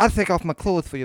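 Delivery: put-on lisping voice on every s. Imagining a stripper talking with the Dusty Rhodes lisp. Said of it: "had the Dusty Rhodes, like, lisp? Be like, she'd be like".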